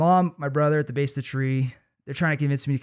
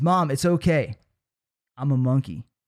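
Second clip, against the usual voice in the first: put-on, cocky, supremely confident, totally self-assured delivery. Retelling his reply to mom from the treetop: imitating supremely confident self. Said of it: "with supreme confidence".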